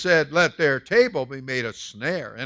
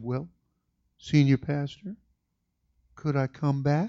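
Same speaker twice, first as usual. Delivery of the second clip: voice gone very small and shrunken; 4 dB quieter than usual. Retelling how a man answered him, imitating a small voice. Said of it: "And his voice got real small".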